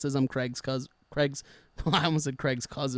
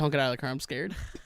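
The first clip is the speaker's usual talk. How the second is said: acted frightened man's voice, fearful tone. Retelling what an armed man told him at the car, imitating a frightened man. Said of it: "He was a little scared of me".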